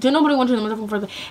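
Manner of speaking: heated, fast and furious angry delivery. Retelling what was said back after being rejected by text: retelling an angry retort. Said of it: "I was so mad".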